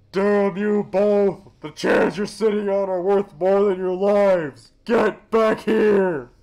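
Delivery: very high, very loud, shrill drawn-out scream from afar. Reading a character's line shouted at the others from the beach: screaming. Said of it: "He's screaming at us from the beach".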